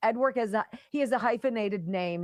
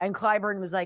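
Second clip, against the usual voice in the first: ordinary delivery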